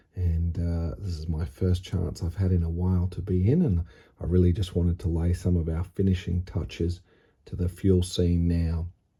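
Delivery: quiet, hushed voice. Welcoming viewers near midnight while others in the house sleep: hushed tone. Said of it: "I'm speaking in this hushed tone".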